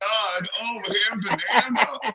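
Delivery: very slow, high, drawn-out blubbering sobs. Retelling how Mike cried on the panel: imitating someone crying. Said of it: "He breaks down like a little baby".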